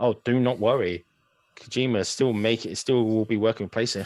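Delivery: normal talking voice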